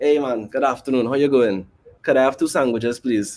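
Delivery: polite, toned-down Trinidadian accent. Showing how to order politely in a restaurant: toned-down Trinidadian accent. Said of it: "I am still talking like a Trinidadian".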